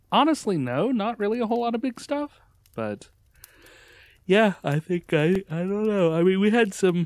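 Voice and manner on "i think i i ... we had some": words stretched and broken by yawning. Answering the other speaker's question, yawning while talking. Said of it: "Sorry for yawning".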